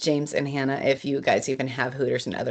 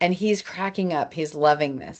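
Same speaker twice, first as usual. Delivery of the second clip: usual speaking voice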